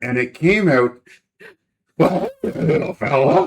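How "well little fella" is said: creepy clown voice, pitched high. Retelling the voice improvised on the spot for a wizard character: Pennywise voice. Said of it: "What's an old mad wizard sound like?".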